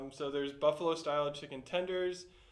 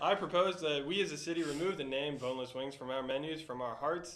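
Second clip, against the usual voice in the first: ordinary delivery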